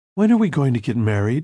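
usual speaking voice

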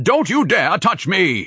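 very high, shrill bellow, muffled as through a scarf. Narrator reads a man's retort to a woman who dropped a check in his lap, bellowing through a scarf. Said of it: "He bellowed through the scarf".

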